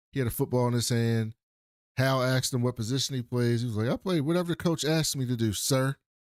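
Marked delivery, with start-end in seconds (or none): 3.9-5.9 put-on respectful, polite little boy voice. Retelling a sheriff's visit, quoting the woman's little son, imitating a respectful little boy. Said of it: "Very respectful little boy".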